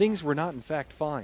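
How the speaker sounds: omniscient storybook narrator voice. After a missed roll, the player narrates their own situation: narrator voice. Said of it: "narrator's voice".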